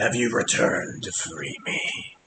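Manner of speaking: hushed, raspy whispered voice. Narrator voicing the large tree as it speaks again: raspy tree voice. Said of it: "and the raspy voice is back".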